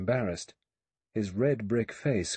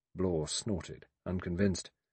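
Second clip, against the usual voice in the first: ordinary delivery, nothing marked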